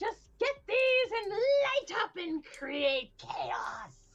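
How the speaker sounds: very high, swooping, giddy, excited goblin voice. Voicing a goblin selling fireworks from a booth: excited goblin. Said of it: "He's so excited about this".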